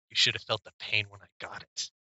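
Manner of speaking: soft whisper, close to the ear. A game master's character answers a player's whisper, whispering back. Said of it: "He kind of whispers back".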